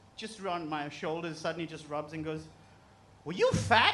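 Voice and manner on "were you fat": Thai masseuse voice. Retelling a massage where the masseuse suddenly asks: imitating the Thai masseuse. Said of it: "this Thai lady".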